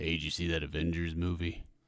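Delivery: deep rural backwoods voice. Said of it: "like some redneck backwater guy".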